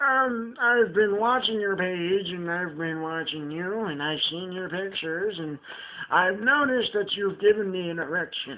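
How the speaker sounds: put-on elderly man's voice. Acting out a caller in the middle of the night: imitating an old man's voice. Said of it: "but have it in an old man's voice".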